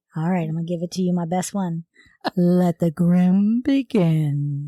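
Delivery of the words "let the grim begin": spooky, slow voice with begin stretched out. Opening the next part of a crime story: put-on spooky Halloween voice. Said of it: "trying to be all Halloween spooky".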